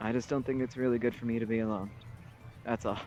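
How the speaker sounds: kind of quiet, soft, subdued voice. A man pauses and turns away, then speaks kind of quiet. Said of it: "kind of quiet".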